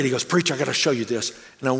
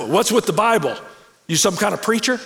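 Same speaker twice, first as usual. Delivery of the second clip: big, booming voice, pitched high; 7 semitones higher, 3 dB louder than usual. Retelling what a man said on first seeing his Bible, big booming voice. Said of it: "he had this big booming voice".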